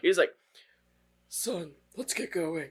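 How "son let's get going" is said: put-on deep voice, hushed, very soft and slow. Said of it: "his voice gets deeper".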